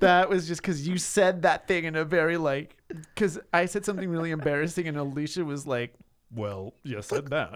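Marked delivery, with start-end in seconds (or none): 6.3-7.6 low, barely voiced muttered aside under the breath. Speaker recalling saying something embarrassing, imitating Alicia under her breath. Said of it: "It was really like under her breath and low".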